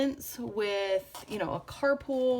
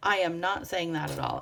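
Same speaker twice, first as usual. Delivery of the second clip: ordinary talk, nothing marked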